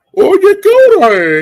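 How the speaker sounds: mock thick slurred words, very high, very loud. Retelling what an uncle used to ask: imitating slurred speech. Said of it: "he had a slurred speech".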